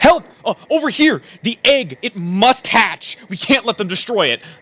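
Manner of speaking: very high, frantic, urgent, panicked voice. A man by a glowing machine spots you and waves you over, panicked. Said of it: "waves you over in a panic".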